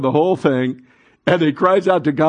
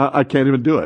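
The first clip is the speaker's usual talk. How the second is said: ordinary delivery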